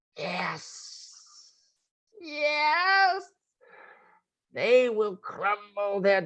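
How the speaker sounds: high-pitched, hissing, foul demonic creature voice. Narrator voicing a thing speaking foul language, high-pitched hissing voice. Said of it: "you hear this high pitched voice".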